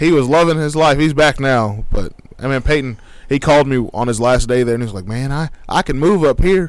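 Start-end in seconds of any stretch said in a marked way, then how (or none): 5.0-6.7 put-on country accent. Retelling a friend's phone call in his country voice: Peyton impression. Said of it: "you have the perfect Peyton impression".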